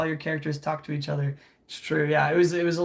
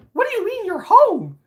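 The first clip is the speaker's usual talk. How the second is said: put-on cartoon mouse voice; 7 dB louder than usual. Doing a Mickey Mouse impression outside a store, talking to Patrick: Mickey Mouse voice. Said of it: "my impression of Mickey Mouse".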